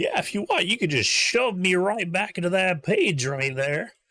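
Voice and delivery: very high, loud cartoonish talking-vegetable voice. A cartoon broccoli drawing come to life speaks to the players, cartoon broccoli voice. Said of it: "a cartoonish piece of broccoli comes out. There, I made you a vegetable. Hi, I'm broccoli. / a cartoonish piece of broccoli comes out. There, I made you a vegetable. Hi, I'm broccoli. Oh, you talk. I".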